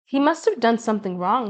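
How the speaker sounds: plain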